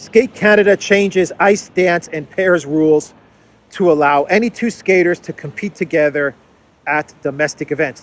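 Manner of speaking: plain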